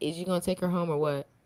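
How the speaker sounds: ordinary delivery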